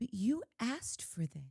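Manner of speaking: put-on soft, helpless damsel-in-distress voice. Speaker complaining about a woman's damsel act, imitating her soft voice. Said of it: "talking in that softer voice".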